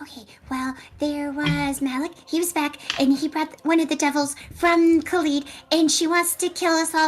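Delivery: very quiet, low, hushed murmur. Telling the others what happened, speaking very quietly. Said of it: "so I go very quietly".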